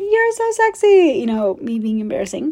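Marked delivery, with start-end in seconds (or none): 0.0-1.2 shrill, very high shrieking scream. Recounting being in a crowd, speaker re-enacts screaming at a man on stage. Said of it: "I screamed, I was like".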